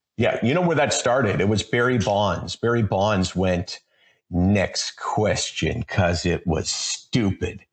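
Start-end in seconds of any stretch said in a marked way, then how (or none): 4.3-5.9 put-on condescending voice, lower pitched. Explaining where the rule came from, quoting Barry Bonds: condescending Barry Bonds imitation. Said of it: "I'll say it in that condescending way".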